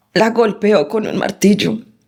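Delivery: ordinary talk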